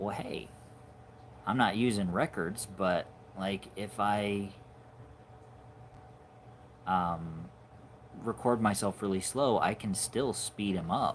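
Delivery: ordinary delivery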